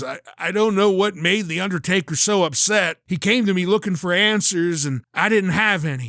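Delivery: raspy voice, words rasped out. Retelling Kevin Kelly's words, still on the ground after a beating: imitating Kevin Kelly's raspy voice. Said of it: "in a raspy voice says".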